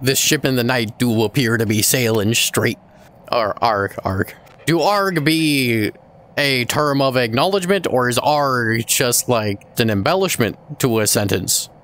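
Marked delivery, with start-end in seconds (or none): 0.0-2.8 pirate voice, spoken much faster. Speaker, challenged to talk like a pirate for five minutes, talks like a pirate. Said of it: "Talk like a pirate for 5 minutes".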